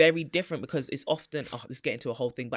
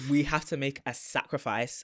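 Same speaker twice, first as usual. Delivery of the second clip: normal talking voice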